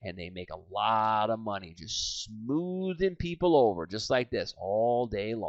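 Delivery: smooth, laid-back, low, slow, soft salesman drawl. Speaker describing types of salespeople demonstrates one kind: low and slow. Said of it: "the low and slow people who talk like this".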